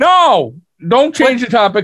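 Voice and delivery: high-pitched yelling. Telling the other speaker not to change the topic: yelling. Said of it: "I'm yelling at you".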